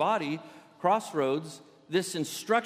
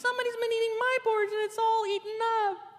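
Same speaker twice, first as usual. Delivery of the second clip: squeaked out, very high pitched. Telling the three bears story, voicing the baby bear: squeaky Baby Bear voice. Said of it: "And the baby bear squeaked".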